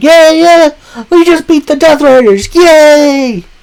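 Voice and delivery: mock giddy little-kid cheer, very high. Retelling a wrestler's excited interview after a win: imitating kid-like excitement. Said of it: "jumping around like a little kid".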